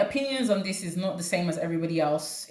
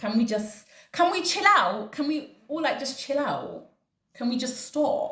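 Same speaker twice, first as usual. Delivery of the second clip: animated, higher-pitched South London accent; 7 semitones higher than usual. Speaker asks the group to stop the foolery, slipping into a South London accent. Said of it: "made me go back into my South London accent".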